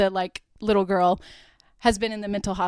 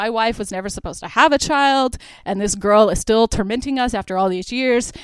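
ordinary talk, nothing marked

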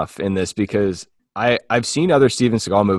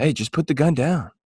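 soothing, gentle, coaxing voice with raised pitch; 6 semitones higher, 4 dB quieter than usual. Imitating how Steven Seagal talks: soothing Steven Seagal voice. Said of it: "soothe a wounded animal".

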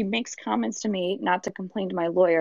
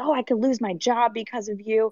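put-on yelling voice; 2 semitones higher than usual. Retelling what she said while yelling at the speaker: imitating someone yelling. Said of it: "starts yelling at me and says".

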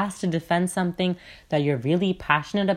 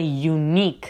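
the word 'unique' stressed. Speaker demonstrates how to say the sentence, stress on 'unique'. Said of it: "notice how I stressed the word unique".

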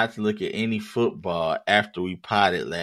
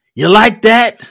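belted out high and loud; 14 semitones higher, 15 dB louder than usual. Recapping a win over the Falcons, quoting a catchphrase: Kirk Cousins voice. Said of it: "In the Kirk Cousins voice".

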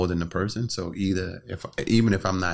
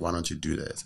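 mock whisper, quieter; 3 semitones lower, 6 dB quieter than usual. Acting out a voice in the ear suggesting an idea: imitating a whispering voice. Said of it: "you hear this voice whisper in your ear".

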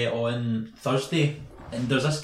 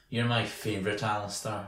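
put-on creepy voice, lower and quieter; 4 semitones lower, 6 dB quieter than usual. Speaker retells how someone who asked them out spoke, imitating a creepy voice. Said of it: "the most creepily possible went".

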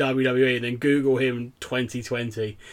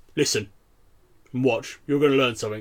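stern, severe scolding tone. Retelling how the seminar leader turned and scolded: imitating a stern rebuke. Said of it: "turned around to me like this massive stern".

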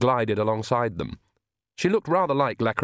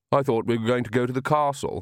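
ordinary delivery, nothing marked

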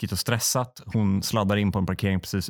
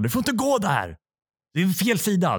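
put-on very high, swooping, loud shout; 10 semitones higher than usual. Retelling how registration staff yelled at a woman on the wrong side, retelling a shout. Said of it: "skriker de som registrerar bara".

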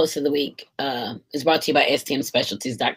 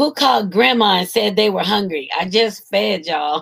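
high, mock hollering as if calling far; 5 semitones higher, 4 dB louder than usual. Retelling a woman yelling as she turns around with the food, retelling a yell. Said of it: "she yells".

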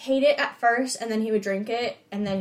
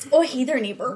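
upper-Midwest Wisconsin accent; 2 semitones higher than usual. Talking about Wisconsin on an episode, a host demonstrates a greeting: Wisconsin accent. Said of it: "It sounds like you're saying it in an accent".

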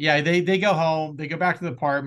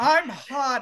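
play-acted, very high-pitched shout; 10 semitones higher than usual. Retelling how a character yelled while transforming: imitating a yell. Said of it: "he literally yelled".

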